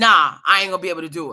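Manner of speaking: blunt, curt, offhand, dismissive tone. Retelling how the driver refused at once: imitating the driver's blunt refusal. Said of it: "immediately it was a no from him".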